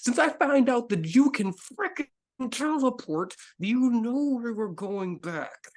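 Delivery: very high-pitched, spoken through clenched teeth. A character in a role-play scene speaks to another through gritted teeth. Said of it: "you were speaking through gritted teeth".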